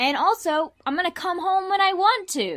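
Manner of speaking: high, loud, irritated rant.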